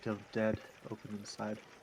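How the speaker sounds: quiet mutter under the breath, to oneself. Voicing a character who speaks to themselves before leaving: muttering under breath. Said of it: "I mutter under my breath".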